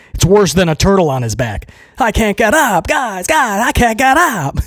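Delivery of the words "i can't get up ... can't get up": high-pitched put-on little kid voice. Acting out a kid stuck in the snow: imitating the kid from A Christmas Story. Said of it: "Like the kid from the Christmas Story".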